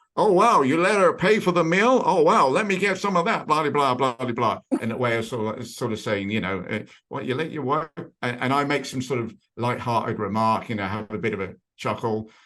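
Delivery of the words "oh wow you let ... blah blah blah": put-on American accent, raised and pitched up. Quoting a man at the next table, imitating an american accent. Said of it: "he has an American accent".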